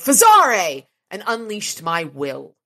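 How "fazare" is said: loud, high shout with full force. Reading a story, the narrator shouts a spell word as oncoming headlights loom; shouting. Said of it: "I shouted".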